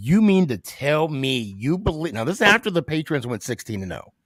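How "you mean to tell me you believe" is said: put-on condescending drill sergeant voice. Retelling a first sergeant's question about the Giants: imitating a condescending tone. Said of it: "the way he said it too is so condescending".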